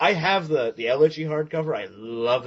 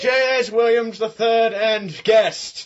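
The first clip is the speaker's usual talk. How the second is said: posh, slow, fancy English formal announcer voice; 8 semitones higher than usual. Showing how to introduce a guest at a fancy dinner, as a fancy english waiter. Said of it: "like you're introducing him at a fancy dinner in England".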